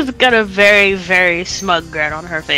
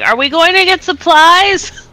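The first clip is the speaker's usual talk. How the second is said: very high, drawn-out shout, rising in pitch; 11 semitones higher, 4 dB louder than usual. Voicing a character asking over loud car music: shouting over loud music. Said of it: "She just kinda shouts over the music".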